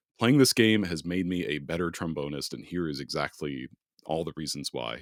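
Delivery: normal talking voice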